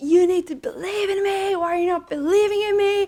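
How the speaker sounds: play-acted, shrill, very high frustrated scream. Retelling screaming at dad while driving him to Arlanda: imitating screaming at someone. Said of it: "I screamed at him".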